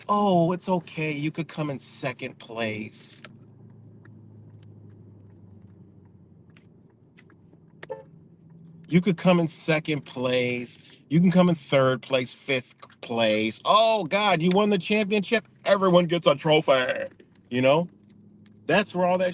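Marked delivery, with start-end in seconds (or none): 0.1-17.1 put-on slow, babying, coddling, soothing voice. Mimicking how Love and Lighters talk: mimicking Love and Lighters. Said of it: "that's how them Love and Lighters is".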